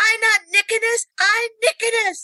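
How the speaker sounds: put-on very high, mad child-like voice. Retelling how a student corrected the kids: imitating an angry student. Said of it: "he gets so mad".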